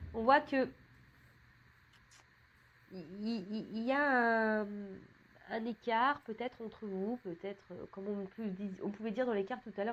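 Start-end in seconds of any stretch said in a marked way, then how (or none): 0.1-5.7 very slow, halting stammer with repeated words. Speaking to listeners about a distance between them, stuttering. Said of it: "je bégaye".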